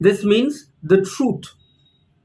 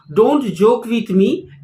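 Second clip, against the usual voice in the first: plain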